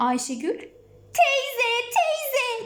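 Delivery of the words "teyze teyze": high, urgent calling shout. Running to the farmer woman after the dog leaves, shouting. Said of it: "diye bağırarak".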